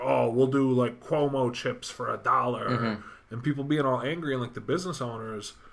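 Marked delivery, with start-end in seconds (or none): 0.0-3.0 very slow, drawn-out, mocking sarcastic drawl. Imitating people complaining about a rule: mock-sarcastic complaining tone. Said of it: "doing like this sarcastic".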